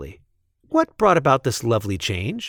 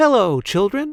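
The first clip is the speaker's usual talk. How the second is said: sugary, sweet, very high voice; 10 semitones higher than usual. Reading a story aloud, someone greeting the waiting children, sweet voice. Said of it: "someone said in a sweet voice".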